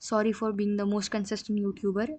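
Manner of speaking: normal talking voice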